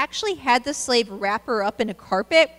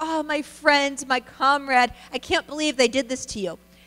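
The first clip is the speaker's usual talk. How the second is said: mock crocodile-tears, tearful grieving voice; 2 semitones higher than usual. Retelling Julius Caesar receiving Pompey's head: imitating fake tearful crying. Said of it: "he cried and was like".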